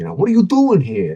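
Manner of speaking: put-on high-pitched Brooklyn accent held throughout. Imitate the actor playing Judas in a funny movie, in Harvey Keitel's Brooklyn accent. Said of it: "Harvey Keitel's Brooklyn accent throughout".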